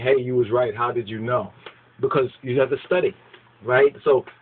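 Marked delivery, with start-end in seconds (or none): none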